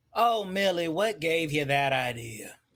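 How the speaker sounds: dry, sarcastic tone. Answering Millie's claim about a murderer in the building: sarcastic. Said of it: "that sarcastic malarkey".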